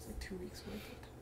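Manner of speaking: soft, unvoiced whisper.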